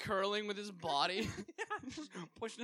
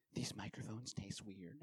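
confiding whisper, very low, quiet and soft; 10 semitones lower, 11 dB quieter than usual. Retelling what a guest whispered on the podcast, imitating someone whispering. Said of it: "he leans over and whispers to me".

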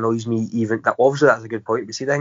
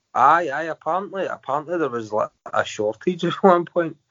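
words breaking into laughs throughout; 5 semitones higher than usual. Explaining to another speaker that cemeteries had a shortage, laughing while talking. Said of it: "Don't know why I'm laughing".

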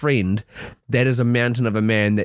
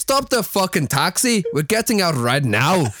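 put-on Irish accent, pitched up; 6 semitones higher than usual. Redoing a man's order to the taxi driver when asked to: Irish accent. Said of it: "Do it Irish".

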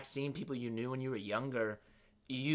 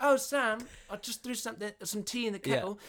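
put-on easygoing, welcoming British mum accent, pitched up; 8 semitones higher than usual. Imitating the other speaker's mom at home: relaxed British accent. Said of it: "relaxed, uh, British accent".

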